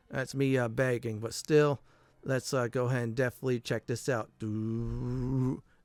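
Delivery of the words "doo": soft, poorly done drum sound made with the mouth. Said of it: "that's a poor imitation of a drum".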